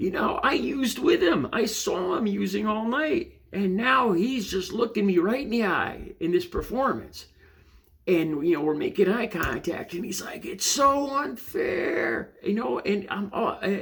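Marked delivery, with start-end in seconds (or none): 10.4-12.3 theatrical, high-pitched aggrieved screaming. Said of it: "This guy is screaming at me".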